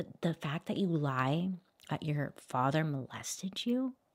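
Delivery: speaking in a whisper. Speaker reacts to what a woman said while her father watches, whispering. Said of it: "I'm like whispering".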